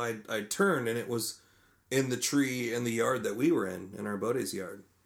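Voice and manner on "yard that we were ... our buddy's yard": ordinary talk, nothing marked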